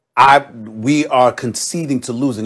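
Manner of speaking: ordinary talk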